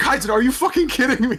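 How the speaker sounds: very high, shrill yell with voice shot way up. Describing a scene where an on-edge character loses it, retelling his yell. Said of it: "he yells like".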